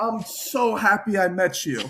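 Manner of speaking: put-on thick South African accent. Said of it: "very South African, thick accent".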